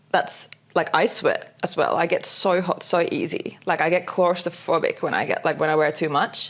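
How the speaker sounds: ordinary delivery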